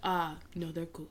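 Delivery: put-on big Italian-accented movie mob boss voice. Retelling how Tony came out to the booth: imitating Tony as a mob boss. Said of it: "I felt like he was a mob boss".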